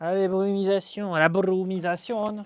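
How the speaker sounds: loud, put-on, fake Spanish accent. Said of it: "je fais un accent hispanique".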